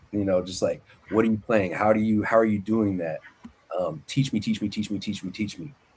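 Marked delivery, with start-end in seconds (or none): 1.1-5.7 put-on pleading, pestering tone. Retelling how they pestered an old guitarist to teach them: imitating own past pestering. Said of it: "who I would just pester".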